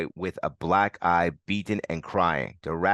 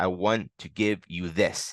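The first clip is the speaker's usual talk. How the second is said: ordinary delivery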